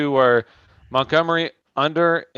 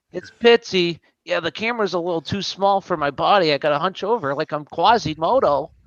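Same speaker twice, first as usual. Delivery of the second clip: chatty, casual, pitched-up friendly voice; 5 semitones higher than usual. Imagining how Pitsy would call in on camera: imitating Pitsy. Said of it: "That'd be Pitsy".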